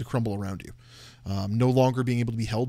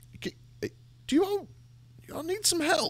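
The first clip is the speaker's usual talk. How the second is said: put-on old man voice, higher. Voicing an elderly man who finds the group sitting on logs, in an elderly man voice. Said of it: "a tall, thin, elderly human man".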